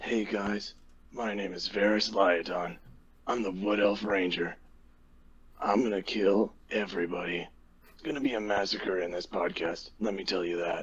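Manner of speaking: smooth, low voice. Introducing a wood elf ranger character to the audience: smooth Keanu Reeves voice. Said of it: "that smooth Keanu Reeves voice of your character".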